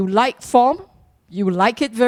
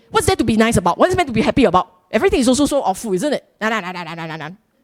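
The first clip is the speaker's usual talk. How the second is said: cross, angry, complaining, grumbling outburst. Voicing what an angry person would say, mock-angry tone. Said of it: "if you are an angry person, you will say".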